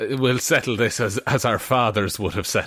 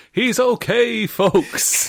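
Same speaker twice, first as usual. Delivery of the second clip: very high, put-on PA announcer voice; 12 semitones higher than usual. Joking about a crash, imitating an announcer: imitating an announcer. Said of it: "it's just the announcer that they've hired comes on".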